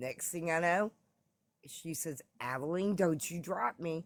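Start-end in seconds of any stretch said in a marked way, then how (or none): 2.4-4.1 mock snarky, smart-aleck voice. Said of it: "she was being a smartass".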